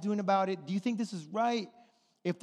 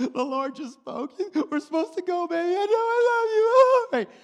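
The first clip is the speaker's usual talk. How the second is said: mock very high, loud, tearful sobbing; 11 semitones higher, 8 dB louder than usual. Retelling a moment both spouses cried together: imitating past crying. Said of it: "And I start crying".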